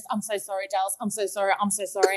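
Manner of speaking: play-acted, apologetic voice. Retelling what a client said before running out, imitating someone apologizing. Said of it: "at least he was apologizing".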